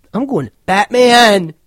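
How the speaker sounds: sudden, abrupt, very loud, high booming shout. After hushed talk in a podcast game, a player blurts out his vote in a sudden loud outburst. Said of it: "all of a sudden he got really loud".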